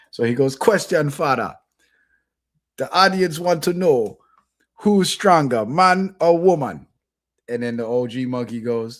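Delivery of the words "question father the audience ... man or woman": put-on Jamaican accent in a show-host voice. Retelling a show host interviewing an older monkey: Rasta Monkey's Jamaican accent. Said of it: "they got Jamaican accents".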